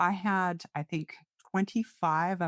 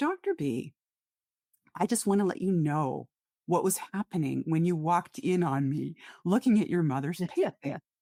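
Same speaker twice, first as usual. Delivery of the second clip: choked-up voice catching, close to tears. A doctor recounting a patient's letter, about to cry. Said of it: "I'm going to cry".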